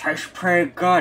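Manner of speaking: mock talking out of side of mouth. Imitating a man who kept talking about food, talking out the side of his mouth. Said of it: "He was talking out the side of his mouth".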